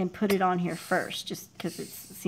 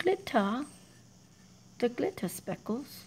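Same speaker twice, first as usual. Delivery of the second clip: pitched-up put-on British accent on glitter; 5 semitones higher, 4 dB quieter than usual. Pointing out glitter speckles the way brits say it, put-on british accent. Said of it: "That's how my Brits say it".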